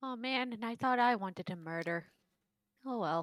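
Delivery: nonchalant, indifferent, shrugged-off delivery. Speaking in character as Abby: shrugging, indifferent tone. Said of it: "as Abby said so shruggingly".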